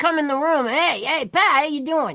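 spunky, feisty, lively, cheery delivery. Retelling how she greeted people on entering a room: imitating a spunky friend's voice. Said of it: "with that kind of voice".

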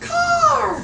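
high, screeching crow-like cry. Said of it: "in a tree screaming".

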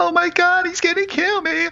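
put-on very high, panicked, terrified crying scream. Recounting a film scene where a child spots the killer: retelling a child's screaming. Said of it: "he starts screaming".

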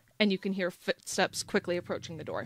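ordinary delivery, nothing marked

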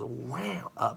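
very soft, nasal wow, sighed out.

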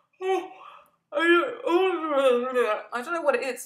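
very loud talking through a yawn, drawn-out "oh". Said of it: "I'm yawning again".

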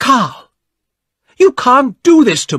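shrill, very high, very loud furious yell. A narrator reads a young woman shouting at a young man: angry shout. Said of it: "shouted at the man".

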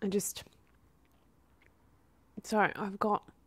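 tearful voice, crying while talking. Apologizing to viewers while venting about work: crying while talking. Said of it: "I really didn't wanna cry on camera".

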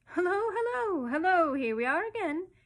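joyous, joyful high-pitched scream. A starling back from holiday lands on the windowsill; screaming joyfully. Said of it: "he screamed joyfully".

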